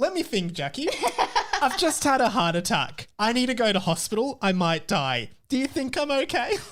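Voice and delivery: put-on defensive, biting sarcasm, high and swooping. Acting out your own hypothetical reply to someone asking if you're okay: acting out a sarcastic reply. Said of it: "he still maintains this sarcastic persona".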